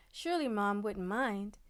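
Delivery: ordinary delivery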